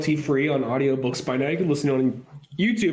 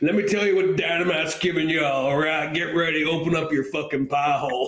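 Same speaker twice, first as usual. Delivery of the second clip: pushy, hard-sell salesman voice. Imagining the other speaker's sales pitch as someone's uncle with a beer gut: imitating a beer-gut uncle's pitch voice. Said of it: "the way you say in that voice".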